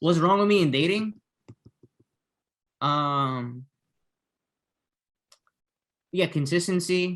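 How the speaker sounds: slightly shaky, trembling, drawn-out um. Answering what's wrong with them in dating, a little shaky voice. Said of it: "Your voice got a little shaky".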